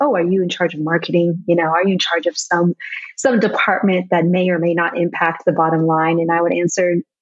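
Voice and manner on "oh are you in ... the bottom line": ordinary talk, nothing marked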